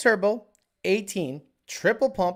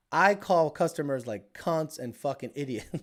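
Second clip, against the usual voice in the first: ordinary talk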